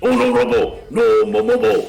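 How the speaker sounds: high, creaky, raspy character voice. Attempting to say a comic title like Mojo Jojo: Mojo Jojo voice. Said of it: "attempts to say that like Mojo Jojo".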